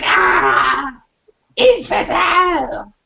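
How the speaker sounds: very high, rasping, rough monster shriek. Voicing a ghost struck by energy darts: screaming creature. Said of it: "and it screams like".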